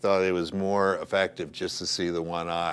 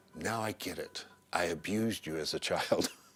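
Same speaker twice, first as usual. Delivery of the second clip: half-whispered, breath only, hushed; 7 dB quieter than usual. Retelling a dying scene, the speaker repeats the line he half-whispered to him, retelling a half-whisper. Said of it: "he whispers to me".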